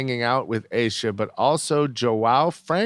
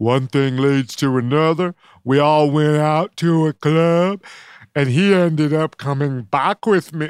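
loud, hammy, dumb-sounding put-on voice; 3 semitones higher, 5 dB louder than usual. Reading out quotes from a reality star: dumb voice for Aisha. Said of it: "I was doing a dumb voice".

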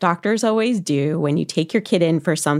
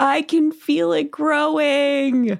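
mock crying, much higher pitched; 10 semitones higher than usual. Retelling how Sasha reacted at dinner to her blistering wart; imitating Sasha crying. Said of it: "Sasha was just crying and going like".

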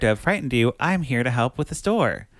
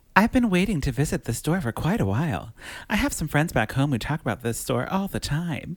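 grand, refined, fancy, classy put-on voice; 2 semitones higher than usual. Telling listeners what Beth Broderick says, use a fancy, classy Beth Broderick voice. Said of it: "I'll say it in my Beth Broderick voice".

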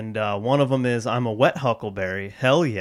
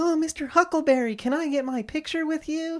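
put-on pitched way up, eager, excited child voice. Retelling how he asked someone for a picture, acting like an excited little kid. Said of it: "I'm like a little kid at a candy store".

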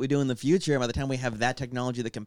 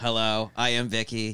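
put-on robotic character voice; 2 semitones lower than usual. Recalling an 80s robot girl played by a regular actress, in Vicky robot voice. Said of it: "she had to talk like this".

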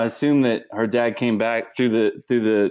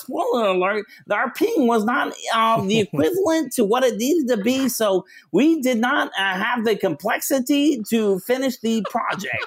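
put-on voice, very high-pitched; 12 semitones higher than usual. Imitating a friend's way of talking while telling a failed project: imitating Jose's voice. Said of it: "I'll talk in my Jose voice".

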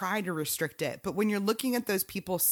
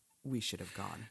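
acted, really mournful, very soft, very low hushed voice; 10 semitones lower, 9 dB quieter than usual. Retelling what he said after a mishap in the driveway, imitating a really sad voice. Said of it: "But in a really sad voice".

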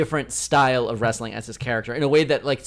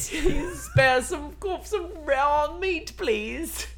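fake British accent, much higher; 13 semitones higher, 4 dB quieter than usual. Continuing the other speaker's comedy bit, in a put-on british accent. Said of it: "our first British accent of the night".

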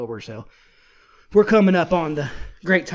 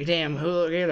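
normal talking voice

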